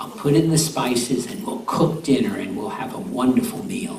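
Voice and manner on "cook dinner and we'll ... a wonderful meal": ordinary delivery, nothing marked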